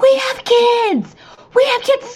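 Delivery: put-on screaming, pitched very high and nervous. Recounting her husband going down, retelling her own screaming at him. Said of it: "I'm like screaming at him".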